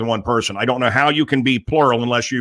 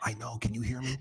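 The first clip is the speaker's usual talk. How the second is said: hushed whispering voice, quieter; 16 dB quieter than usual. Asking a guest a question while children listen: whispering. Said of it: "why are you whispering?".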